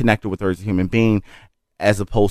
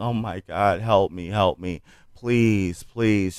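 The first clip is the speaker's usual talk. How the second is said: put-on desperate pleading, much slower; 5 dB quieter than usual. Retelling a girl screaming behind glass, imitating someone pleading. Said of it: "she's screaming and she's pleading".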